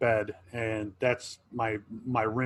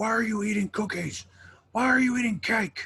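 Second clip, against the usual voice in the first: put-on very high, shrill, squealing toddler yell; 11 semitones higher than usual. Retelling how a two-year-old yelled about cookies: imitating a child yelling. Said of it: "started yelling at her".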